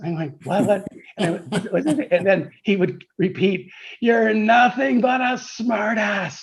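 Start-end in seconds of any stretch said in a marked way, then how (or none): 4.0-6.4 full-lunged, pitched-up, all-out yelling scream. Recalling a phone call, the speaker imitates Sandy Baird screaming. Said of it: "screaming at me at the top of".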